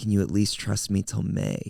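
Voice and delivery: ordinary talk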